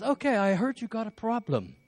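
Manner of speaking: high-pitched, mock English accent. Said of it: "I loved his accent".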